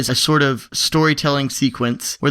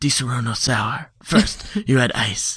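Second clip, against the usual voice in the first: sexy, sultry commercial advertisement voice; 2 semitones lower than usual. Imitating a liquor commercial announcer: sexy commercial voice. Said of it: "this real sexy, sexy voice".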